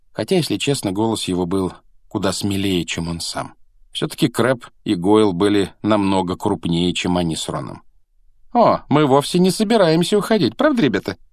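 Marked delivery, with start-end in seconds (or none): 8.5-11.2 sneering, smug, smirking, taunting tone, pitched up. Malfoy turns to his companions in front of Harry and Ron, smirking. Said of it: "усмехнулся Малфой".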